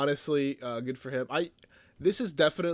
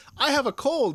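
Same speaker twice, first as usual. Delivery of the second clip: put-on cheerful, very high-pitched, bright happy chirp; 13 semitones higher, 6 dB louder than usual. Quoting a sick show character who announces he has a cold: imitating Omega saying it happily. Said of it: "such a happy, like, demeanor".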